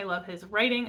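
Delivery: writing given heavy stress.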